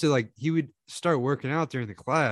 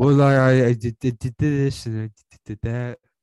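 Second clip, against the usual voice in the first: imitated close-to-mic mumbling voice, louder; 7 dB louder than usual. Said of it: "talks, like, with his mouth on the, the microphone".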